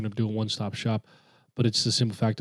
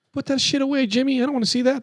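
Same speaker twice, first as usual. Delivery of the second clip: very high yelling, scolding parent voice; 3 dB louder than usual. Playing a bad parent scolding a kid over something he made: mock-yelling as a parent. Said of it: "I'm just yelling as your parent".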